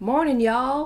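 put-on American accent. Retelling a couple's morning greeting in a breakfast area, put-on American accent. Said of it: "that's my American accent".

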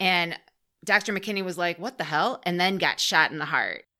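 normal talking voice

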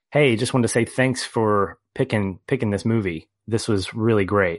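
ordinary talk, nothing marked

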